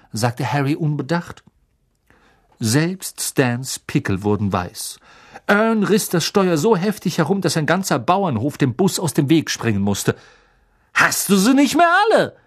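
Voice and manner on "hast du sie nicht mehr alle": high, breathless, gasped-out outburst. As the bus swerves wildly, he gasps at his companion: gasping. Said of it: "keuchte Stan".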